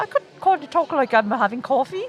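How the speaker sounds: quick, refined, upper-crust posh British accent. Speaker who picks up accents tries talking differently for a listener: posh British accent. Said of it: "So that sounds like you're meeting the Queen".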